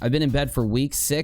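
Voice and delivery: normal talking voice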